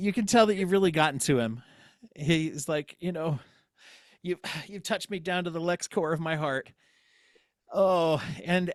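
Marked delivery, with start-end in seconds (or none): 3.0-6.7 put-on crying voice, higher, quieter, slower. Speaker retells how Lex reacted after being moved, imitating Lex crying. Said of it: "Lex starts to cry".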